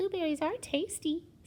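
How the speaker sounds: wee, little, small, high-pitched voice. Reading the Goldilocks story aloud, voicing Baby Bear's line in Baby Bear's wee little voice. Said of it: "said Baby Bear in his wee little voice".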